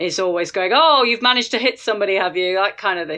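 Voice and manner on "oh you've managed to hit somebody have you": put-on sharp, biting Scottish accent. Speaker quotes the elf in a game he plays, imitating Carillion's acerbic Scottish accent. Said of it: "She's got this Scottish accent and she's like really acerbic".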